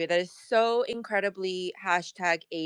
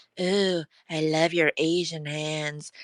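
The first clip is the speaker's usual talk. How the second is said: mocking, creepy man voice; 2 semitones lower than usual. Retelling what men say to her, imitating a creepy man. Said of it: "really creepily being like".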